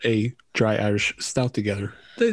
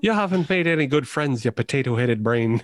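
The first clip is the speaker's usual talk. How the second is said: put-on Irish brogue. Joining the group's banter, one speaker slips into a put-on Irish accent. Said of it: "we need to move [name] away from this voice".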